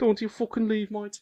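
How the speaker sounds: very high, badly done put-on Birmingham accent. After saying he wants to leave, answering himself in a Birmingham accent. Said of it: "It's fucking Birmingham, innit?".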